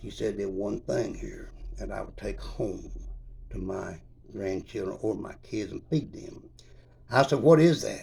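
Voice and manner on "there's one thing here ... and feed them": scared, low, hushed, kept-down voice. Retelling what a woman in the store told him, low voice. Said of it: "in a low voice".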